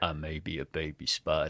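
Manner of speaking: put-on very deep, low, soft, hushed old man's voice. Improvising an animated spider film, voicing the baby spider: Morgan Freeman voice. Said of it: "an old seventy-eight-year-old man's voice".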